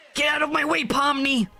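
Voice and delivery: very high, strained, squeezed-out straining voice. Gamer voicing Silver yelling at Pomni: strained, constipated Silver voice. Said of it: "My my Silver just sounds like he's constantly constipated. Squeezing out a big one".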